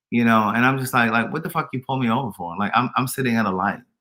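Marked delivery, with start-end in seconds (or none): 1.3-2.5 acted irritated, fed-up, indignant, annoyed voice. Retelling a traffic stop by police: imitating own annoyed self. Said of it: "But I was so annoyed".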